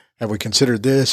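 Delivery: ordinary talk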